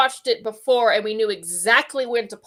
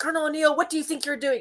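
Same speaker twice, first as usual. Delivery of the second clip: put-on yelling, called out, pitched up; 6 semitones higher, 3 dB quieter than usual. Retelling a favorite Stargate scene: imitating General Hammond yelling. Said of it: "General Hammond yells".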